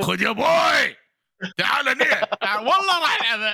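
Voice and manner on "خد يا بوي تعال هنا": imitated Upper Egyptian accent. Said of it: "لو كريتوس يتكلم صعيدي".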